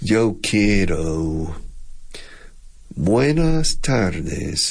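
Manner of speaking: very slow Texas drawl, quiero stretched out. Explaining the Texas drawl by showing it on a Spanish phrase, Texas drawl. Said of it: "un acento de alargar las sílabas".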